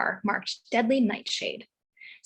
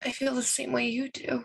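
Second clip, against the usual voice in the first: high, tiny, almost tearful voice; 4 dB quieter than usual. Speaking to the empty spot where Jack was: high, tiny, almost tearful voice. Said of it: "Her voice gets high and tiny".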